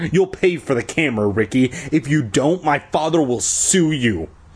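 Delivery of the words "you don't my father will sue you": ordinary delivery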